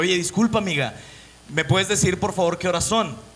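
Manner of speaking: normal talking voice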